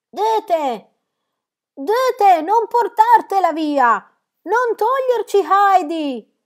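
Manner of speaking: very loud, very high, drawn-out pleading cry. The old grandmother rises and cries out from the window to Dete. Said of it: "gridò dalla finestra".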